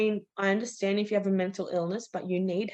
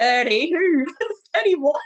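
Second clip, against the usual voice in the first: laughing while talking, higher and louder; 7 semitones higher, 9 dB louder than usual. Retelling what was said back at the neighbour: laughing while talking. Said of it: "I'm laughing going".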